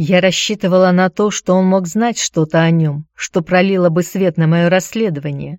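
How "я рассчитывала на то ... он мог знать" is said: plain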